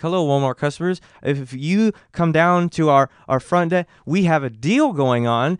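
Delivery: halting, stammering announcer voice, repeating words. Retelling a Walmart intercom announcement, imitating a stuttering intercom announcer. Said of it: "he's like stuttering, and he like would repeat".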